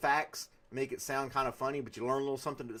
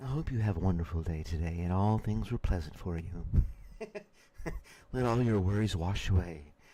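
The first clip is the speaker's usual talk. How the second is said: calm, positive, low seductive voice; 6 semitones lower than usual. Recreating the looped recording for a watch video, the speaker uses a seductive voice. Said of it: "my little um, seductive voice in the background".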